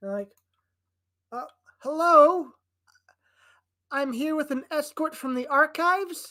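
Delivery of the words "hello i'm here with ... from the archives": very loud, high woman's voice. A storyteller voices a woman heard at the portcullis; woman's voice. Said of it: "And then there's a woman's voice. / And then there's a woman's voice".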